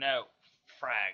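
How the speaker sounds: grumbling, muttered. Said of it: "Lockdown grumbled".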